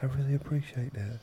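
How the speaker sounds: gentle, softly spoken, high-pitched voice. Retell a musician's reply to your praise of his music, in a soft voice. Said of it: "And this is a soft voice".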